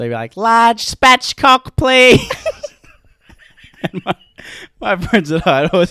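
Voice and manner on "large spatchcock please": mock yell, much higher and louder. Recalling a chicken shop worker calling orders, the speaker is retelling a shop worker's yell. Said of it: "And he'd always yell it".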